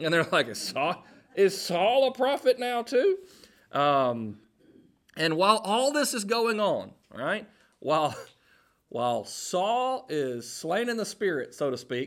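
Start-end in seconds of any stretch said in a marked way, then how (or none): 0.5-3.2 heavy dose of sarcasm, pitched-up voice. Acting out the people watching saul, imitating sarcastic onlookers. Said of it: "read it with a good bit of sarcasm".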